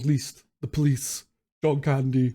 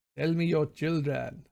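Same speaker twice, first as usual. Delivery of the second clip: badly done put-on Russian accent; 2 semitones higher, 4 dB quieter than usual. Retelling what a man asked him, bad russian accent. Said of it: "he's trying to do a Russian accent. Maybe my accent's awful".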